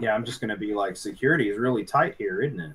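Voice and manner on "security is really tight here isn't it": dry, mocking, sarcastic tone. Speaking in character to security agents after a fight: sarcastic.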